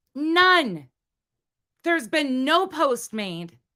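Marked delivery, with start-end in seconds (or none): 0.2-0.9 upset and angry, higher. Telling viewers that an unconfirmed claim has to stop: heated, angry. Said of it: "I'm really heated right now".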